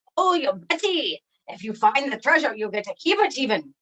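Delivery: pirate character voice. Asked by the host about his treasure chest, the pirate friend answers in pirate voice. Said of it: "my pirate friend".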